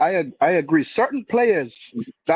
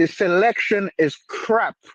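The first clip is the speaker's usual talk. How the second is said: ordinary talk, nothing marked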